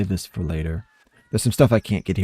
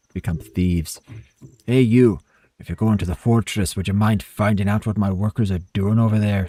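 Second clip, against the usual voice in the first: put-on vague Scottish or Irish accent. Reading a game character's lines aloud, in a scottish or irish accent. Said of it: "Scottish or Irish or something".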